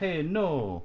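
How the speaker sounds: high-pitched, put-on Japanese accent in English. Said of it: "I'm gonna talk like that".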